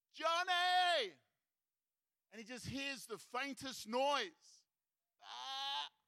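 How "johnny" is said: loud, high, desperate calling yell. Retelling the shepherd's last call for the lost sheep: imitating the shepherd yelling. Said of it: "he yells out just one more time".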